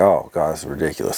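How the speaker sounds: ordinary talk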